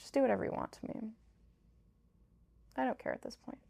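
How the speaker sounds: worn-out, defeated, exhausted, breathy near-whisper. Retelling her own words to the child's father: imitating own exhausted voice. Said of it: "I was so tired".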